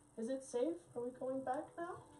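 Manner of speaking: very soft, high calling voice. Running a game, the speaker voices someone calling from the hallway, very soft voice. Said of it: "you hear a very soft voice kind of call out".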